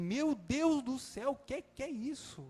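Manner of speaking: put-on high, panicked, desperate cry of despair. Retelling finding a bleeding woman on the bed: retelling own desperate cry. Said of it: "eu desesperei".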